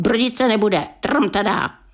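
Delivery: plain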